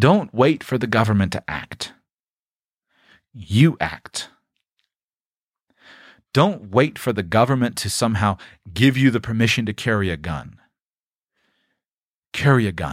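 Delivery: fed-up, frustrated, exasperated tone. Speaking to an audience, admitting the frustration can be heard; frustrated. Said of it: "you're hearing the frustration in my voice".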